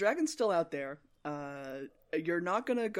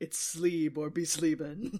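hard-boiled film-noir detective narration voice. Riffing with friends about a sleepy Vimes, in a noir detective voice. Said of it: "Noir detective voice in this world".

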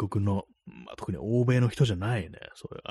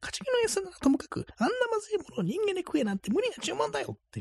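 put-on voice pushed very high; 4 dB quieter than usual. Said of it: "高い声で言わないと".

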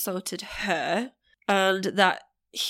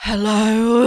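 mock irritated, fed-up, loud, annoyed voice; 3 semitones higher, 10 dB louder than usual. Describing how their mum always answered the phone, imitating an annoyed hello. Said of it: "Why are you already annoyed?".

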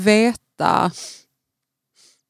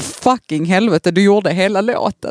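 plain

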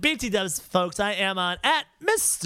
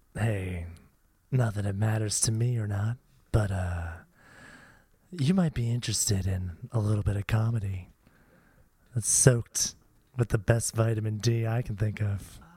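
low, sexy, luring, seductive voice. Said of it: "lure, using your, all of your sexy wiles".

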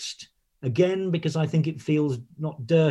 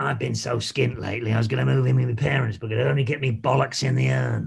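put-on horrific, creaky, rough dirty-old-man voice; 4 semitones lower than usual. Trying out a joke line aloud to ask how it sounds: dirty old man voice. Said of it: "some horrific dirty old man".

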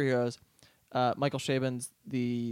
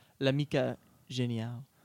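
French-accented pronunciation. Saying the italian title of a novel aloud: french accent. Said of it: "that was a French accent".

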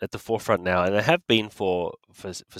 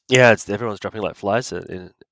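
ordinary talk, nothing marked

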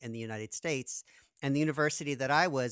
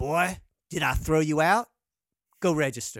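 loud, gruff voice; 8 dB louder than usual. Retelling the band leader's answer after rehearsal, gruff Paul Jeffries imitation. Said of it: "with a gruff voice".

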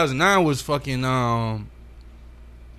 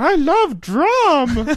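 put-on acted old woman voice; 6 dB louder than usual. Doing a bit in an ad for a live show: Grandma voice.

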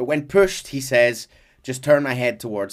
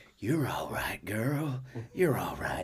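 put-on sexy intimate voice, quieter; 2 semitones lower, 11 dB quieter than usual. Imitating a game character speaking to his horse: sexy intimate Arthur voice. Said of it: "it's just him leaning in and going".

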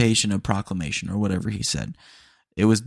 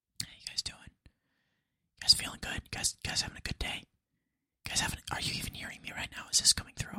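speaking in a whisper, quieter. Greeting listeners close to the microphone: whispering. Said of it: "the world's quietest podcast".

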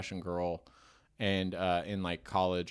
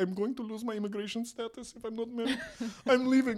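put-on sobbing, very high-pitched, tearful crying voice. Retelling a story where the groom gets cold feet, imitating the woman crying. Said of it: "she's like crying and like".

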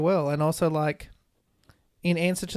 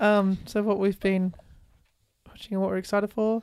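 flat, unenthused tone. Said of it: "He sounds so unenthused".

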